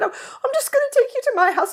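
put-on very high British accent. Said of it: "I'm sure he had a British accent".

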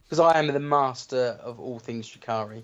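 normal talking voice

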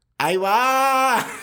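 shrill, very high, loud squeaky voice, va stretched. Retelling calling back after someone shouted a name: squeaky voice. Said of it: "con una voz chillona digo".

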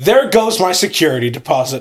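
ordinary talk

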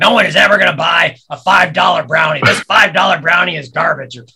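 very loud put-on pirate voice. Retelling a man who teased them about the $5 brownie, pirate voice. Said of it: "he had this great pirate voice".

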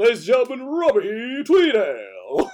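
very loud, swooping showman stage announcer voice. Speaker imagines an announcer introducing him on a stage, stage announcer voice. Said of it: "I need an announcer going".

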